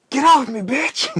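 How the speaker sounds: high, loud scream at full volume. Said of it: "And I scream".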